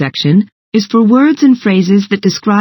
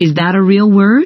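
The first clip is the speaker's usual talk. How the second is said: usual speaking voice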